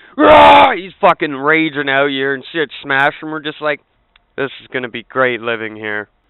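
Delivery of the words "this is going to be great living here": mock sarcastic delivery. Retelling the reaction to the raging neighbor: imitating own sarcastic remark. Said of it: "Hold that sarcasm".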